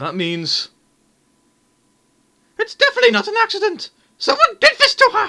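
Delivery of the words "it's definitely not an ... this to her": very high, loud, overacted pantomime mother voice. Playing through a story aloud, the speaker voices the mother; pantomime-style mother voice. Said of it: "I don't know if I'm giving the mother's voice justice, but I'm sticking with it, because it's just what you'd hear at a pantomime. / I don't know if I'm giving the mother's voice justice, / because it".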